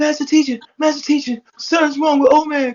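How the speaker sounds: play-acted, tearful, very high-pitched crying plea. Retelling a woman running up to warn him: imitating someone crying. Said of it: "And she's crying".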